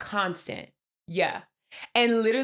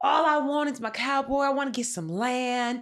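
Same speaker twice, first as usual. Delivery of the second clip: put-on country accent; 3 semitones higher than usual. Imitating how a woman talks to a man, in a country accent. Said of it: "her country accent comes out really loud".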